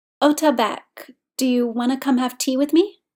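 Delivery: ordinary delivery, nothing marked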